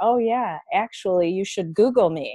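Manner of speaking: usual speaking voice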